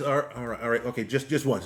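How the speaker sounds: usual speaking voice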